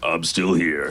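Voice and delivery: mock low deep voice. Imitating a game character's voice line: Spoon deep voice. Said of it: "Spoon is the one that's got the really deep voice".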